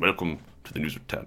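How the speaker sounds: whispered news anchor announcement voice. Imitating Trevor McDonald welcoming viewers on stage: Trevor McDonald impression. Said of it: "which I believe is what he sounded like".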